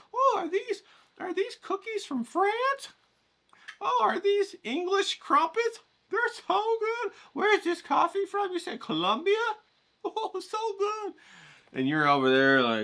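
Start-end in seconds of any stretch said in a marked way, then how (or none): 0.1-11.1 very high, giddy, excited gushing. Imitating a mom drinking coffee and eating at a rich lady's house: imitating an excited, gushing mom. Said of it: "your mom's all excited".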